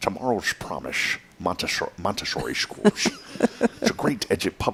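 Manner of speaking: whispered, shaky, bad Scottish accent. Try out an accent you have not done in a while, a terrible Sean Connery accent. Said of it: "I'm trying to do a Sean Connery accent".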